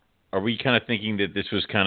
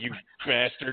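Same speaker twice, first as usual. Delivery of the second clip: ordinary talk, nothing marked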